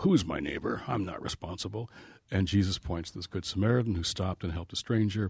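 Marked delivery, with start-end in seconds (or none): 0.0-1.9 mock Washington lawyer voice, slower. Retelling the lawyer's question from the parable: Washington lawyer tone. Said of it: "I can tell that tone of voice".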